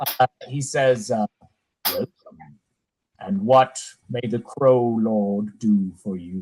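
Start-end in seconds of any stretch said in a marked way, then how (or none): 1.9-6.4 low, flat, expressionless monotone. The masked Crow Lord strides toward the visitors and greets them; flat monotone voice like Tony J. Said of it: "very kind of flat, monotone voice".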